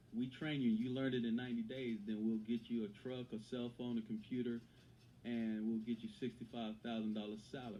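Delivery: ordinary delivery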